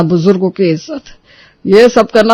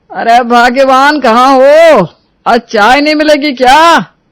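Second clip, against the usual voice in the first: shouting, yelling at a higher pitch; 5 semitones higher than usual. Calling for morning tea from another room: shouting. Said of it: "क्यों सुबह सुबह चिल्ला रहे हो?".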